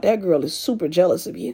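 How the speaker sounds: ordinary talk, nothing marked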